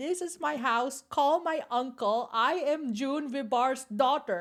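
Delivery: high, deliberate screamed protest. Retelling screaming at police from atop a gate: imitating a scream. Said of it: "I started screaming at them".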